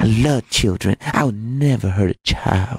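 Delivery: slow, drawn-out, put-on childlike voice. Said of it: "that ridiculous put on childlike voice".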